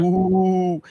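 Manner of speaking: loud, drawn-out spooky ghostly ooh moan. Explaining how people imitate a ghost, doing a ghost. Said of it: "people may do a ghost and they go".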